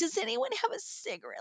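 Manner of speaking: soft, mock-pitiful plea. Telling a story about Courtney at the bar: imitating Courtney's pitiful plea. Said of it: "feel sorry for me kind of thing".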